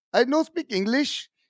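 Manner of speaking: put-on Indian accent. Asked about a difference between accents, the speaker demonstrates an Indian accent. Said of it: "the Indian would be like".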